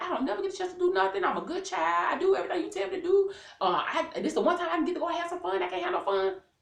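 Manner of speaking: put-on upset, aggrieved, put-upon childlike tone. Retelling being told no about going out: imitating being upset. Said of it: "So I'm upset now because I'm like".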